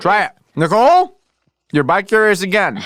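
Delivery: high, drawn-out yell with big pitch swings. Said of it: "Stop yelling at me so much today".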